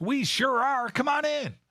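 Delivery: shrill, very high yelling call. Retelling a barista's answer from behind the counter: imitating a barista yelling. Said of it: "yelled from under her face mask".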